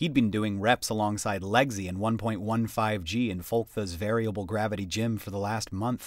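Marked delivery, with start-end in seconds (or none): none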